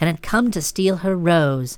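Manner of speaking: ordinary delivery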